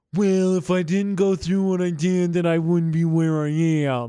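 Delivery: put-on, very nasal voice, right through the nose. Mimicking the other person's hippy-dippy answer in a put-on nasal voice. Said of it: "Very through the nose because of the pollen alert".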